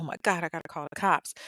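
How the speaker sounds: frantic, tearful, panicked crying outburst. Retelling the roommate discovering the scene, imitating someone panicking and crying. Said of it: "she's panicking and crying".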